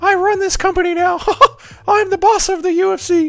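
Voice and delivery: very high-pitched cartoon-style voice. Answering a viewer's request to do Mickey Mouse trash-talking: Mickey Mouse voice. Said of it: "Mickey Mouse from, um, South Park".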